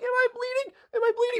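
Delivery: put-on very high tearful wailing cry. Retelling how a girl hit in the face reacted: imitating someone bawling. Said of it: "starts bawling her eyes out".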